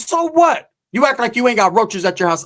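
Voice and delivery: mad, fired right back. Retelling a reply to a woman insulting them, retelling an angry reply. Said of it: "And I got mad".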